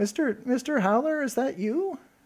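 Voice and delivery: small, tiny, very high, distorted-sounding voice. A voice comes through a weak-signal speaker asking for mister howler, small distorted intercom voice. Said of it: "it's this this kind of small voice".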